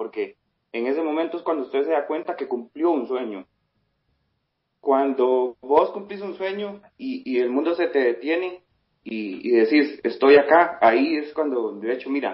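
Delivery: choked-up, emotional, cracking voice. Recalling the moment a lifelong dream came true, voice breaking with emotion. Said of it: "se me corta la voz todavía".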